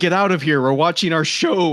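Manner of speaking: play-acted loud, high yelling shouted in unison. Retelling how three sisters yelled when the door opened: imitating sisters yelling. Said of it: "yelled at me".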